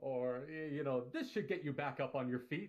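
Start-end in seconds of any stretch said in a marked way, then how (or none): 1.1-2.7 cheery, boisterous video game support hero voice. Showing how a healer would talk when casting heals: video game support class voice. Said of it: "play him like a video game support class".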